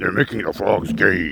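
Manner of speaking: creaky, roughened put-on voice. Doing a voice they find funny for a bit: Alex Jones voice. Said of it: "that Alex Jones voice".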